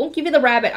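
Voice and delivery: ordinary talk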